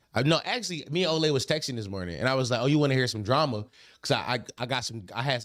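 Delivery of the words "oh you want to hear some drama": usual speaking voice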